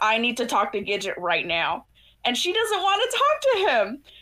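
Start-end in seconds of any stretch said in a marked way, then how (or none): 0.0-1.9 put-on angry voice. Retelling what an angry character said: imitating an angry demand. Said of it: "Smokey gets angry and says".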